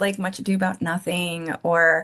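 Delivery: ordinary delivery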